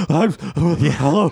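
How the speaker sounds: crazy-sounding voice, pitched high. Imitating another speaker taking a phone call while walking briskly uphill: imitating someone sounding crazy on the phone. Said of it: "I sound like a crazy person trying to talk on the phone".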